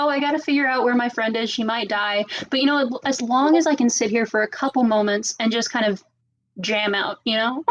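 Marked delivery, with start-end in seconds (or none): none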